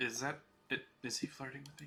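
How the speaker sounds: whispered aside. A character handed a daisy whispers to somebody nearby: whispering. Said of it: "She whispers to somebody nearby".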